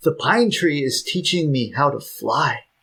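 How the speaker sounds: thrilled, eager, excited delivery. Retelling what he said as a child to his grandmother: imitating his excited child self. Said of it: "I very excitedly said".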